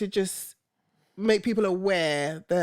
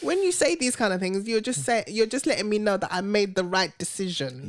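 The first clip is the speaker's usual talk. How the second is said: ordinary delivery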